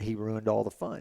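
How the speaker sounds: ordinary delivery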